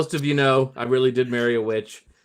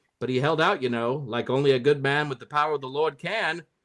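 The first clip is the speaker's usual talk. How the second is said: put-on old movie mid-Atlantic accent. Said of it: "I have to find a special voice for this one 'cause this is an old movie".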